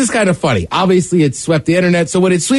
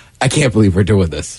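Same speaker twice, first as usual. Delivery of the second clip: low, nonchalant, bored deadpan. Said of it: "she's just so nonchalant".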